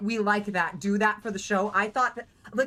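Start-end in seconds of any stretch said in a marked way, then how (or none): none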